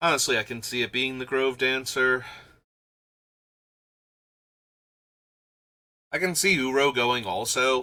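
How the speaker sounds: phlegmy, shredded, hoarse, strained voice. Speaker whose voice is shredded from screaming at the computer, phlegmy, shredded voice. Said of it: "not only am I phlegmy, but I kind of shredded my voice".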